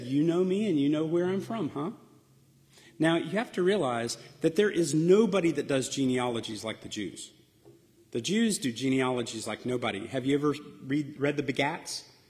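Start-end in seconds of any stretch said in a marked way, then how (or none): 0.0-1.9 mock sarcastic tone. Retelling a reply to a crowd that claims to know him: imitating a sarcastic retort. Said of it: "Jesus sarcastically said".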